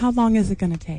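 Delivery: hushed whisper. During a group discussion, one person asks a question, whispering. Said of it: "Do you whisper everything?".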